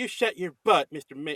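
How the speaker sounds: really high-pitched, feminine, southern voice. Describing a tough-looking film character, imitating Snake Eyes' southern feminine voice. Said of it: "like very, you know, southern feminine".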